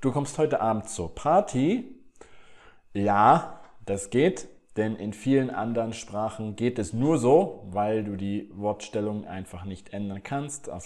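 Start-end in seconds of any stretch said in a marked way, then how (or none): 0.0-1.9 pitch rising at the end on Party. Turning a plain statement into a question: voice rising at the end on Party. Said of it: "dann am Ende meine Stimme heben".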